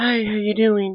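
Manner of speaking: very quiet, reserved, timid voice, soft and high. Describing how someone greets people, imitating a shy, timid greeting. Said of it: "very shy, timid, reserved".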